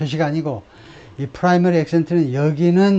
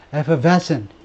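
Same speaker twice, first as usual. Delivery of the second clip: effervescent with weak ef and stress on ves. Vocabulary pronunciation lesson, stress on ves in effervescent. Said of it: "에를 가장 약하게 effervescent, effervescent 이렇게 하라는 겁니다".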